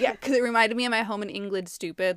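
loud, play-acted sarcastic, stating-the-obvious tone. Recapping a ghost story, retelling a character's sarcastic reply, mock-sarcastic retort. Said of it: "sarcastic about it".

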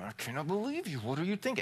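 complaining, grumbling voice. Retelling own reaction in a quarrel: imitating own grumbling. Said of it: "I start grumbling in that moment".

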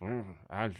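slurred, mumbly, hesitant fumbling through loose lips. Imitating how Jeff Bridges sounds in every movie now: Jeff Bridges voice. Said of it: "That's what Jeff Bridges sounds like now".

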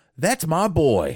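proud, very high, loud screaming. Retelling a mother at her son's movie premiere, imitating her proud scream. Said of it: "his mother jumped up and proudly screamed".

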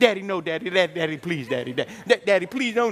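animated, lively pleading. Retelling a brother begging the father not to spank: imitating brother's animated pleading. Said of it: "my brother was animated".

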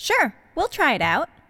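ordinary delivery

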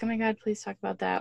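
ordinary delivery

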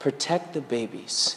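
tiny, small, soft, hushed whisper. Retelling words heard while crying in a car: imitating a small whisper. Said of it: "God whispered to me".

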